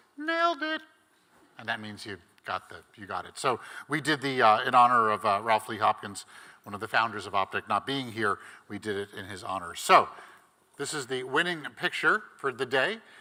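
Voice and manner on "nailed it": voice pushed very high-pitched. Showing the phrase said at critiques for a great picture: high-pitched voice. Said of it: "you'd have to say in a high-pitched voice".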